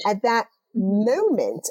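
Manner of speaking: "moment" stressed, stretched slow and wide.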